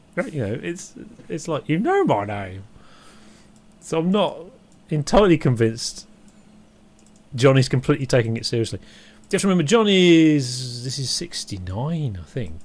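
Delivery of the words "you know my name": silly, goofy, hammy, unserious voice. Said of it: "saying in a silly voice".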